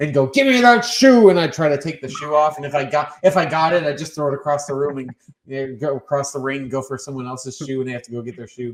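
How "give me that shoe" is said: loud, high, drawn-out yell. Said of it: "I'd headlock their feet and go".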